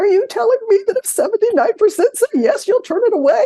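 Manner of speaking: very high, worked-up pleading. Retelling a question at a board meeting: retelling an emotional plea. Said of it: "started to get really emotional".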